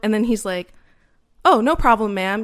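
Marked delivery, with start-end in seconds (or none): 1.5-2.4 fake nice, overly polite put-on voice, louder. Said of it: "fake nice".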